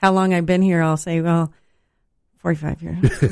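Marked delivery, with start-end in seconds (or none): 2.4-3.3 said in a low voice. On his last day, worker shows how he answers how long he's been here: said real low. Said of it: "Say it real low like that".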